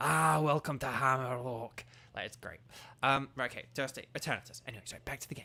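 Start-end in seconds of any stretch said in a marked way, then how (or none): 0.0-1.8 put-on Scottish accent, slower. A streamer chatting between gameplay, in a Scottish accent. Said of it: "say Hammerlock in a Scottish accent".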